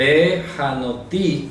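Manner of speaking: Behanoti said slowly, stress on the final i.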